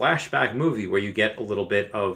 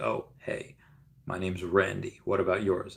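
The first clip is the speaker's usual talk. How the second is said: put-on deep teen voice, lower and quieter; 6 semitones lower, 7 dB quieter than usual. Recalling his voice changing at ten or eleven, imitating his deep seventh-grade voice. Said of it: "this was the voice I had in seventh grade".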